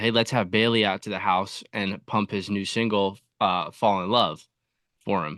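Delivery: ordinary delivery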